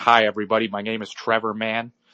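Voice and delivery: put-on preppy, snobby, smug kid voice. Acting out an imagined new kid at school introducing himself: imitating a preppy douchebag kid. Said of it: "He's like".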